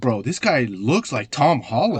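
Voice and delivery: ordinary talk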